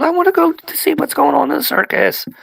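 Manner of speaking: shrill, rough, very high creaky little-monster whining. Narrating to the players as the smaller super mutant, whining. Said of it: "the smaller super mutant whining".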